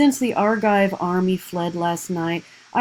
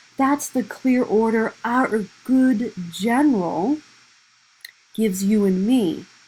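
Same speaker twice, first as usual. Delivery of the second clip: lightly mocking, a little scornful, sarcastic tone; 3 semitones higher than usual. Reading a play line aloud about the general's order: mocking tone. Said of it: "you've heard a little bit of a mocking tone there".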